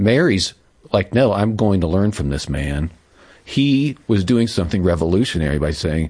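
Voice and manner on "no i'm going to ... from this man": ordinary talk, nothing marked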